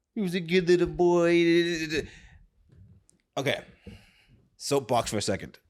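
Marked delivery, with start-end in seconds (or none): 0.2-2.1 put-on high, slow baby talk, boy stretched out. Describing how people talk to their pets, the speaker uses a baby voice. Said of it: "the baby voice".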